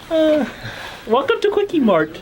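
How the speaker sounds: high, swooping pitch. Greeting staff on a first visit to a restaurant: Apu voice. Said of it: "my name is Apu".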